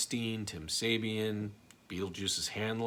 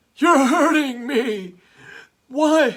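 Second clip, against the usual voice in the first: put-on very high, very loud, very slow drawn-out drunken cry; 18 dB louder than usual. Answering a viewer's request with Artie Lang's Jeff the Drunk impression. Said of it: "Can you do an impression of Artie Lang's impression of Jeff the Drunk?".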